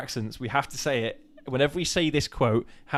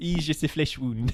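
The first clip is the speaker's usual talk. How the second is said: put-on French accent; 2 semitones higher than usual. Saying a movie quote for viewers to guess, in a stereotypical French accent. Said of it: "get the accent in my head".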